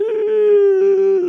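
high, loud mock bawling like a crybaby. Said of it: "like, bawling, like, making noise".

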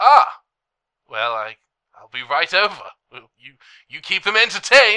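very loud, crackling walkie-talkie radio voice. Voicing a character answering over a walkie-talkie: crackly radio voice. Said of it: "this crackly voice say".

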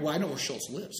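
plain

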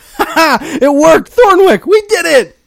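exultant, very high, loud triumphant cry. After a trick works, Bob cheers to Thornwick, triumphant. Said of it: "for you to sound as triumphant".

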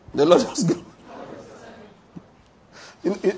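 talking through laughter. Losing the thread of the message, laughing while talking. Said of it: "you know why I'm laughing now?".

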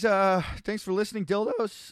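voice cracking. Signing off the show to listeners, voice cracking. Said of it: "Voice break there".

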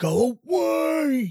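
high, slow, shouted little dragon voice. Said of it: "like, dragon voice".

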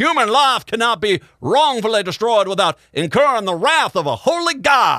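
put-on, dumb-sounding Alabama accent. Quoting a chief justice's written opinion, in a stupid-sounding alabama accent. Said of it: "in the most stupid-sounding accent I could possibly do. Alabama".

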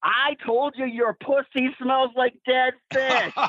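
put-on very high, shrill, top-of-the-lungs scream. Retelling what a wrestler shouted in a woman's face: imitating a loud shout. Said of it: "even louder, ten times louder".

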